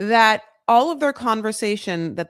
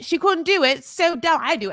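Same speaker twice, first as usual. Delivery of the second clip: put-on, British-sounding UK accent; 7 semitones higher than usual. Imagining how Joshua's friend Nat would answer, Nat impression, UK-sounding accent. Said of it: "That was a U K accent".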